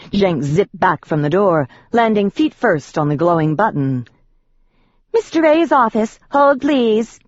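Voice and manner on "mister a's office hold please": thin, very high head-voice falsetto. Narrating a story, voicing a character's line in a high falsetto. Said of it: "he said in a high falsetto".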